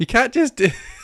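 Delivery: loud, high talk breaking up with laughter. Trying to start the show, laughing while talking. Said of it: "I'm still laughing".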